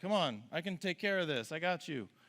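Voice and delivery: easygoing, unbothered, nonchalant, slightly high voice. Retelling a Bible story, quoting Jesus calming the disciples: imitating Jesus, nonchalant. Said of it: "he just nonchalantly like".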